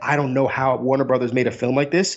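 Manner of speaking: ordinary talk, nothing marked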